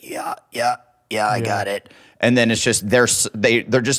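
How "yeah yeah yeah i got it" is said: imitated damaged voice, quieter. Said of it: "Your impression sounds like".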